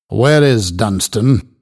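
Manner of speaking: impatient, pressing voice. Reading fiction, a man questions the one who gave money away, impatiently. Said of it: "Cass asked impatiently".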